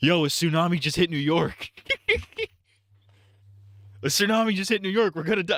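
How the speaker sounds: put-on frantic, high fake-panic alarm. Retelling a prank where someone pretends on the phone: imitating a prankster's fake alarm. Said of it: "pretending he's on the phone. He's like".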